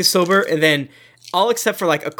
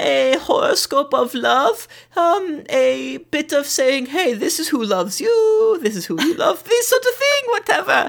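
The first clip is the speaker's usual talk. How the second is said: put-on witch character voice; 10 semitones higher than usual. Voicing the Woods Witch offering charms and fortune telling: Woods Witch character voice. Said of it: "Enter the Woods Witch".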